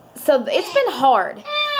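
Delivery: tearful, wobbly voice breaking with tears.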